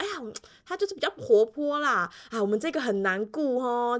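enthusiastic, warm, eager gushing chatter. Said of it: "很热情地说".

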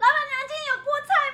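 acted-out shout. Retelling how she calls out to the stall owner when buying vegetables, retelling a shout. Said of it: "我就会大吼".

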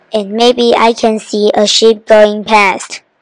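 ordinary delivery, nothing marked

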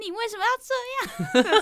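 shrill, high, loud howling yell, words slowed. Retelling a row on a rainy Paris street, retelling shouting in the street. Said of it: "鬼吼鬼叫".

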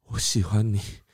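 put-on faint, feeble, breathy, barely-breathing whisper. Recalling confessing love while lying on the ground after a crash; acting out a faint, barely-breathing voice. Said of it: "我就用气若游丝的那个语气就说".

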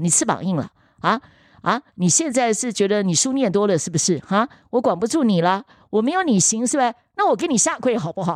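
irate, angry scolding tone. Retelling what the mother said during an argument: imitating an angry mother. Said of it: "为了起争执的时候".

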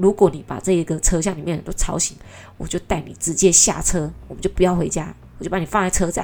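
stern, harsh, menacing tone. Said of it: "他说".

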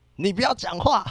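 loud, high-pitched shout. Speaker recounts answering a man who talked back, retelling a loud shout. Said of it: "我直接就很大声的指着他".

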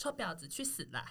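slow, sweet, sugary, very cute voice. Showing how a harsh curse sounds in a very cute voice. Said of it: "用很可爱的声音讲".

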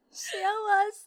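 put-on very high, choked-up, slightly teary sob. Retelling a dream, repeating someone's thanks while imitating a slightly teary voice. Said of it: "我这样子有像吗？".

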